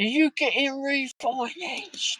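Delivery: play-acted shrill shout, very high and loud. Retelling a woman shouting over to a bloke, imitating a woman shouting. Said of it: "And she shouts over to him".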